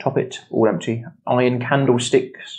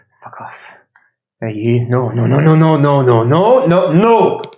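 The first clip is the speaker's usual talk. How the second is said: put-on not-quite Scottish accent, louder; 2 semitones higher, 6 dB louder than usual. Voicing a character heard as a player pokes their head up: bad Scottish accent. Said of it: "the not Scottish, Scottish accent".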